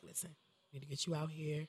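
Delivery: very low, no-nonsense, dead-serious tone. Imitating how West Coast people talk: low, dead-serious West Coast tone. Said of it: "they talk low tone. They be like".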